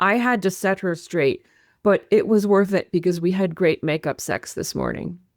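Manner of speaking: usual speaking voice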